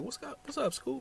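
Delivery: urgent high voice.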